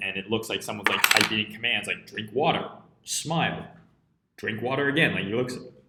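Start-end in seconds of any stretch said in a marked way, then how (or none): none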